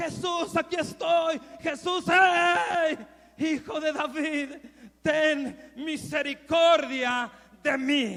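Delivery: frantic, very loud desperate cry with long drawn-out hey. A speaker retelling a Bible story acts out a man calling to Jesus: retelling a desperate shout. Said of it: "desesperadamente Él gritaba".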